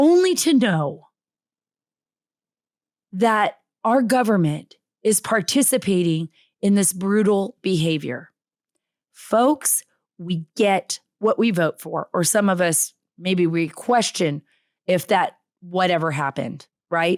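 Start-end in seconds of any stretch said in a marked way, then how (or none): 0.0-8.3 voice close to crying, near tears. Addressing the audience as folks, the speaker is near tears. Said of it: "I'm about to cry".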